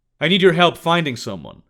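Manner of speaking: ordinary delivery, nothing marked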